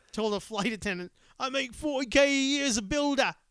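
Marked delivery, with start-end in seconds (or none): 1.3-3.3 loud, loose put-on Manchester accent. Retelling what a man on a plane told a flight attendant, in an attempted Manchester accent. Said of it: "whatever the fuck a Manchester accent sounds like".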